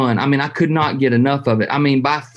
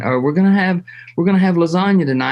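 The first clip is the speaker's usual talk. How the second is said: quick, pitched-up put-on South African accent; 5 semitones higher than usual. Retelling a woman's dinner announcement, in a South African accent. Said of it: "in the South African uh, accent".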